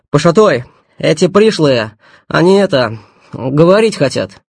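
hurriedly blurted, rushed outburst. A young man, bowing to the gang boss, reports: hurriedly blurted. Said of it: "торопливо выпалил".

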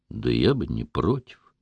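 low, hushed, slow voice, dropped. A rescuer admits to a woman begging to be saved, in a lowered voice. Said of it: "понизив голос".

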